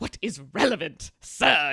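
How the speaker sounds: imitated British accent. Quoting a man's line in a put-on british accent. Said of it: "He's like working that British accent".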